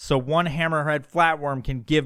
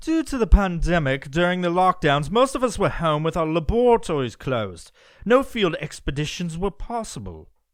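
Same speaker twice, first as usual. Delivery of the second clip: put-on British accent; 2 semitones higher than usual. Rereading a passage aloud, now in a British accent. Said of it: "I'm going to do this in a British accent".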